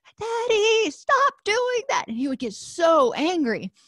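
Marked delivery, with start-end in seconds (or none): 0.2-2.1 put-on, very high, shrieking child's voice. Retelling how a little son reacted to his father's Darth Vader noises: imitating Sean shrieking. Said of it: "Sean would shriek".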